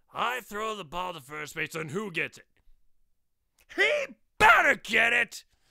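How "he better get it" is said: very loud, high, agitated, excited exclamation. Demanding to know who catches his throw at first base: excited outburst. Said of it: "don't get excited".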